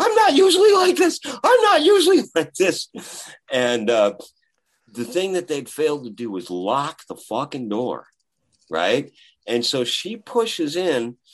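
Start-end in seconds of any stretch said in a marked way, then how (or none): 0.0-2.9 frantic, very high, very loud hysterical shriek. Telling of a fan who burst in during yoga, the speaker imitates her screaming. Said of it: "one of his fans is now screaming out".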